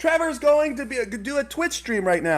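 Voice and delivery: very high, carrying put-on motherly holler. Recounting your mom calling out to everyone at the party, retelling mom's yell. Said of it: "she's yelling to everyone else at the party".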